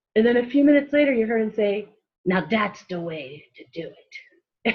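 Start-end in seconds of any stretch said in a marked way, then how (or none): 2.3-4.8 slow Chicago mobster drawl. Retelling an overheard man's remark, the speaker does a Chicago gangster voice. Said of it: "sounded like a Chicago gangster".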